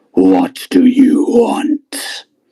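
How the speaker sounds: ominous, dark, echoing god voice. A god answers the player calling to it from inside, dark booming voice. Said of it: "you hear a dark, booming voice".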